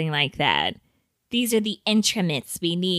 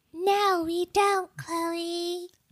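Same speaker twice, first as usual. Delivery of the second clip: very high, soft, irritating mouthy voice; 12 semitones higher, 5 dB quieter than usual. Answering to Chloe on behalf of the listeners, in an annoying mouth voice. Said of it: "that sounded like a person with like a mouth voice".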